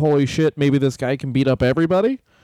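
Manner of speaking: ordinary talk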